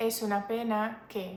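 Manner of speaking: ordinary talk, nothing marked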